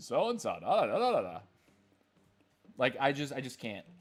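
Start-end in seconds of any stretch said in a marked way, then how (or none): 0.0-1.4 swooping, sing-song AI voiceover narrator. Mocking the ai voiceovers people use on shorts: imitating an ai voiceover. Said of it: "and he talks like this".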